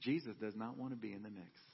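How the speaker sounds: put-on southern drawl. Retelling a wife's reply about Jesus: imitating Hope's southern drawl. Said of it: "had her nice southern drawl".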